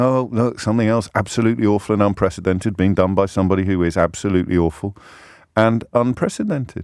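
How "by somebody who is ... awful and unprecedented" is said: ordinary talk, nothing marked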